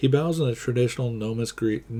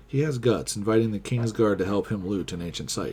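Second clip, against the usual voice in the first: plain reading voice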